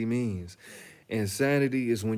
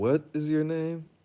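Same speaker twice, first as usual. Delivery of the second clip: slow, high, drawn-out, deliberate delivery; 5 semitones higher than usual. Retelling how she asked the name again: slow, deliberate quoted question. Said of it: "And she said it slow".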